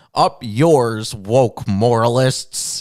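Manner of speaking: slow, drawn-out, deliberate Canadian vowels. Retelling a clip of Jordan Peterson leaving Twitter: Jordan Peterson Canadian voice. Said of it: "Jordan Peterson Canadian voice".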